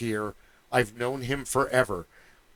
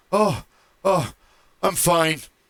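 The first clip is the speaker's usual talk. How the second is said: put-on out-of-breath gasping, raised, very slow; 5 semitones higher, 6 dB louder than usual. Retelling a friend's breathless reply at the campsite: imitating someone out of breath. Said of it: "out of breath".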